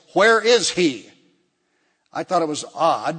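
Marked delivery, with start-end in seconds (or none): 0.1-1.0 mock very loud, demanding, insistent tone. Recalling the hospital room, the speaker quotes the man's mother, retelling a demanding question. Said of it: "in a very demanding voice".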